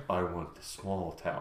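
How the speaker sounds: low, very quiet, creepy voice. Acting out a man's remark as imagined in one's head, creepy voice. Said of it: "I'm like imagining it in some like creepy voice".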